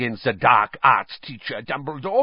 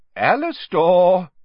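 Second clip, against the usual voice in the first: raised, higher-pitched, cautioning tone; 6 semitones higher, 5 dB louder than usual. Dumbledore addresses Moody after his retort to Karkaroff, warningly. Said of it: "said Dumbledore warningly".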